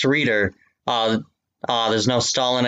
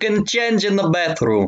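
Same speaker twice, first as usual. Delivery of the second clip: animated, high, sing-song voice with swooping pitch; 8 semitones higher than usual. Voicing a character in a read-aloud scene, sounding like Mario. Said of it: "Your impression sounded like Mario at first".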